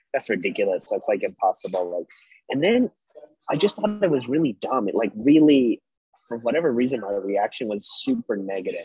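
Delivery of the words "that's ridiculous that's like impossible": plain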